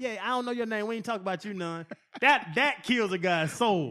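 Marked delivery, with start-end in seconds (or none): 0.2-1.8 put-on pleasant, small-sounding little voice. Retelling how Ronnie spoke to an opposing player: imitating Ronnie's nice little voice. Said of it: "his nice little voice".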